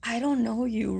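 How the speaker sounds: cool, soft, dead-calm, dismissive tone. Retelling Frances answering a man who is yelling, imitating Frances, real calm. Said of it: "real calm".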